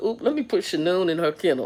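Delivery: mock snarky, sarcastic throwaway quip. Retelling an own past remark at work: retelling a sarcastic remark. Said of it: "and my sarcastic side".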